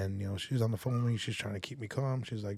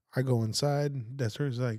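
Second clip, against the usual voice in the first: ordinary delivery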